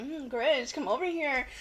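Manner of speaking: sultry, seductive, beckoning come-on. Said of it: "the Grinch comes out and she's like".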